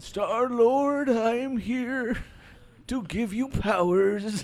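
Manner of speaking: put-on very high, loud, very slow old-man voice. Doing the actor who played Star-Lord's dad: old-man Matthew Modine impression. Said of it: "why is your Matthew Modine such an old, old man".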